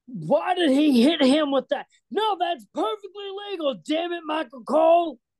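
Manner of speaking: very high-pitched ranting commentator-style voice. Showing how another commentator would react to the same moment, in a JBL commentator voice. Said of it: "J B L would be more like".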